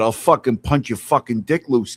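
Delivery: put-on threatening, street-tough Boston accent. Acting out Brian, who lately took on an accent: Brian's Boston accent. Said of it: "Brian's really took on a fucking Boston accent lately".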